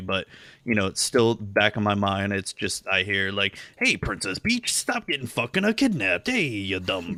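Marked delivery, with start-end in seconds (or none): 3.8-7.2 coarse, loud-mannered voice. Describing the old voice still stuck in mind, the speaker does: Andrew Dice Clay-style Mario voice. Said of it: "It's like Andrew Dice Clay".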